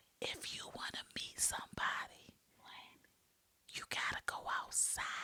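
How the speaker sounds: hushed, very soft, barely voiced whisper. Giving advice to single people, leaning in to whisper. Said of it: "I'ma whisper it".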